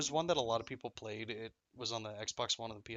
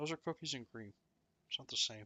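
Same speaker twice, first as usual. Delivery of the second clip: chewing while talking, muffled; 2 semitones higher, 5 dB quieter than usual. Correcting the other speaker about a snack, eating while talking. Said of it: "Sorry if I sound kinda fat right now. I'm eating".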